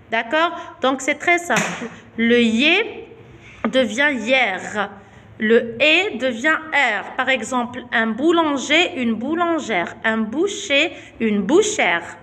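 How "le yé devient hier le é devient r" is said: slow, drawn-out, deliberate dictating delivery. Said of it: "teacher stating the spelling rule".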